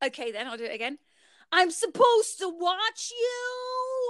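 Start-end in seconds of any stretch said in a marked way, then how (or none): 1.5-4.1 very high, slow, squealed cry with "you" stretched out. Doing an impression again when asked to: Shanice impression. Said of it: "Do you wanna do the Shanice one again".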